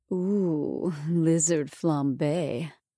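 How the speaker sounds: deep, silky, seductive voice. Narrator reads Vivacia speaking into camera one, in her deep silky voice. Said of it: "said in her deep, silky voice".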